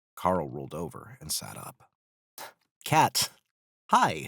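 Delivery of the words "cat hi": anxious, uneasy, nervous voice, raised and high. Carl greets Katina after she lands on the deck, nervous. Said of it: "Carl said nervously".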